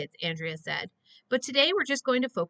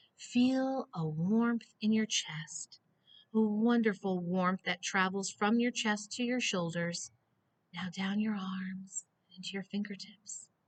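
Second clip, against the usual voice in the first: soft, soothing, calming relaxation-guide tone; 6 dB quieter than usual. Narrator reading Andrea guiding the group through relaxation, soothing voice. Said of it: "Andrea said in a soothing voice".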